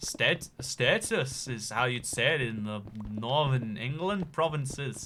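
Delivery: accent gradually drifting into Indian. Trying out accents and failing, accent drifting into Indian. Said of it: "It goes Indian every time".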